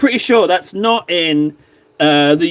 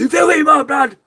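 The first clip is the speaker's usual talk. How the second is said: mock shout, much higher and faster; 8 semitones higher than usual. Acting out an actress's line from a scene she loves, retelling a shout. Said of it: "she shouts".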